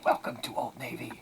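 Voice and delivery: hushed, secretive whisper. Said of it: "whisper it to him".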